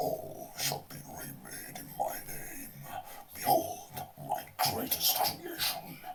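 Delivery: very low, deep, breathy, half-whispered voice. Speaker gives an example line in a really low voice. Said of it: "a really low voice".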